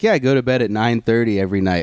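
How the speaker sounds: plain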